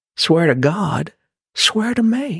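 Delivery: Southern drawl, pitched a bit high. Quoting a top Batman line as a Southern Batman, do a Matthew McConaughey impression. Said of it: "quote in Matthew McConaughey form".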